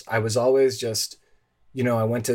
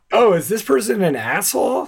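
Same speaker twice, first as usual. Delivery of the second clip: raised, pitched-up, suspicious and wary tone; 9 semitones higher, 6 dB louder than usual. Doing an impression of everyone who hears him the first time: imitating someone hearing him the first time. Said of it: "my impression of everyone who hears me".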